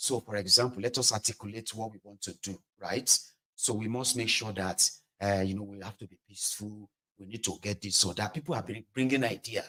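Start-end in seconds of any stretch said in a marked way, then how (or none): 0.0-8.3 low, soft, calm, reasonable talk. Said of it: "it's like we are like".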